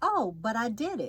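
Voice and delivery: ordinary talk, nothing marked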